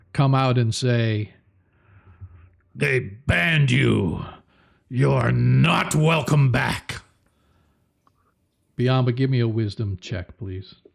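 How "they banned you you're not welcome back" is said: very deep, slow, powerful pronouncing voice. Narrating a scene to the players, the narrator voices a sudden unseen speaker: deep, powerful voice. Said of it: "suddenly you hear a deep, deep voice, a very powerful sort of voice".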